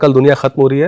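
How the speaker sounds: ordinary talk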